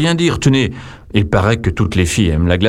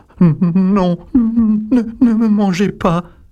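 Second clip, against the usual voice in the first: tiny, very high little squeaky voice; 12 semitones higher than usual. Narrator reading the ogre's plea from the top of the stepladder, tiny little voice. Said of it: "il dit d'une toute petite voix".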